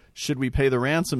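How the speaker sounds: ordinary delivery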